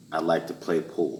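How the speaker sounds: ordinary delivery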